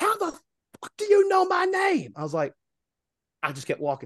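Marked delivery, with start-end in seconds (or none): 0.0-2.1 very high, shrill, drawn-out shrieking scream. Retelling how a woman reacted as he walked away, retelling a scream. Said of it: "she audibly screams".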